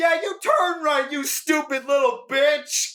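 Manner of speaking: very high-pitched, angry screaming yell. Retelling a friend yelling out a car window: imitating a friend yelling. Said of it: "he yells at them".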